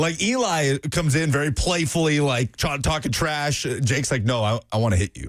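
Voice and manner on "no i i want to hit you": put-on menacing voice, lower. Retelling a caller's threat: imitating a serious threat. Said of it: "he actually sounded very serious".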